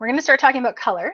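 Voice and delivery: talking super fast, rattled off, rushed.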